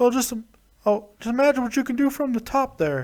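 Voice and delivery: high-pitched, toothless, neutered-sounding drawl. Quoting advice to Mick Foley: Terry Funk impression. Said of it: "he sounds a little bit like a neutered Hank Hill".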